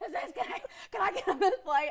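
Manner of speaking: high, panting, breathless, frantic voice. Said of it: "I'm all out of breath".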